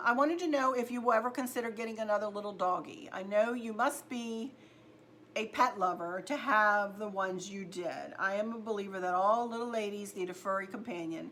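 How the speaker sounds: ordinary talk, nothing marked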